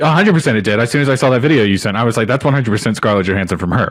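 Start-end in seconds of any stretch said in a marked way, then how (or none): none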